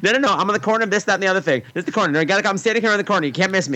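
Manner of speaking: put-on fast chatter. Retelling a man on a street corner talking on his cell phone, really fast. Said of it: "he's on the cell phone talking really fast".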